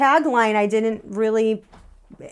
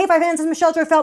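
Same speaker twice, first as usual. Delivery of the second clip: fast-forward double speed, pitched up; 5 semitones higher, 3 dB louder than usual. Speaker imitates the intro of her old videos, really fast. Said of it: "like really fast".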